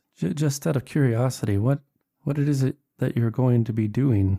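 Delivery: hesitant, halting, stop-start faltering speech. Narrator voices a sighing character asking out of curiosity, in a halting voice. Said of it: "in a halting voice".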